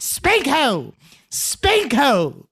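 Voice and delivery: put-on very slow, drawled, lilting sing-song British accent. Retelling what an attacker yelled while spanking women: imitating a yell in a british accent. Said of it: "spank her while yelling".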